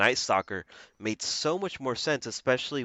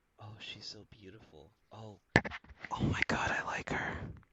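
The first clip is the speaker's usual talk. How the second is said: breathy, breathed-out ASMR-style whisper; 9 dB quieter than usual. Retelling a film scene where a questioned man is shown pictures: imitating an ASMR-style voice. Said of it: "he gets super A S M R with it".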